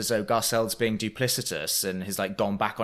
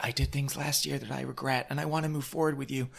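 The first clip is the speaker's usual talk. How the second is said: soft, quick, put-on sad apologetic voice; 3 semitones higher, 7 dB quieter than usual. Recounting a feud on the bed scene, a mock-sad Rinna impression. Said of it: "puts on her sad voice and is like".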